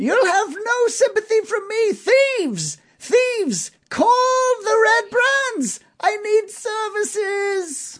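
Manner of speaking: shrill, very high, frantic, panicked yelling. Narrator voices a man crying that newcomers are thieves, freaking out, shouting. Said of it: "And he's freaking out now".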